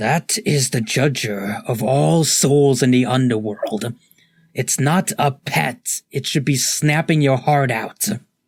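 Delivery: hostile, snarling crocodile creature voice. In the story, the man dressed as a crocodile pipes up, snarling crocodile voice. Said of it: "you see a man dressed as a crocodile, / And the crocodile snarls up and just goes".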